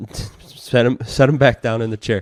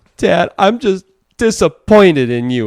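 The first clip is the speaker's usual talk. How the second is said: put-on loud, high, sobbing little kid voice; 8 semitones higher, 7 dB louder than usual. Retelling what a son said in timeout: imitating a crying child. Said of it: "As he's crying, he goes".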